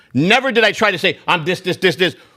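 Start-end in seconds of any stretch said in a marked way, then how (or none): none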